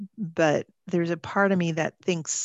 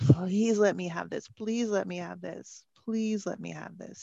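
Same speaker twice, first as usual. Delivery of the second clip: acted pleading, quieter and slower; 5 dB quieter than usual. Describing begging as if someone could grant it, acting out own imploring plea. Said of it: "it's like this imploring".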